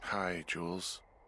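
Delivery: sounding tired. Just out of bed, answering a radio call, tired. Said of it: "you sound tired".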